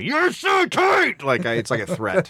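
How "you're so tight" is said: screamed out loud. Explaining a phrase they always scream, screamed out loud. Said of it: "I scream it".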